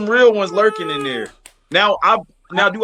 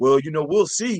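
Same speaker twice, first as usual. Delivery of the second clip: acted frightened voice, lower pitch; 3 semitones lower, 4 dB quieter than usual. Retelling how Tyson pushed for a rematch, quoting Roy's reply: imitating Roy sounding scared. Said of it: "Roy was scared to say something".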